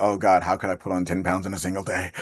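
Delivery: ordinary talk, nothing marked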